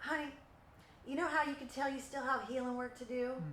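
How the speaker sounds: put-on Texan accent. Speaker quotes a woman who always said this, in a Texan accent. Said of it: "she would always say in her Texan accent".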